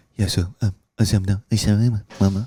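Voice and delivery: put-on nervous, timid, quiet mumble. Retelling a conversation with a quiet friend: imitating someone talking nervously and quietly. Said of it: "he was nervous to talk loud".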